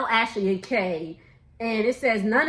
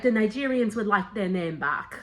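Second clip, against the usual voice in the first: horrible put-on English accent. Retelling what T said, in a horrible English accent. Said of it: "That was a horrible English accent".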